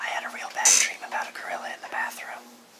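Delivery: quick, quiet whisper.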